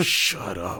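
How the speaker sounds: rough, aggressive, pushy tone. Retelling a movie kissing scene line: imitating an aggressive line. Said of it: "he kinda says it, like, aggressively".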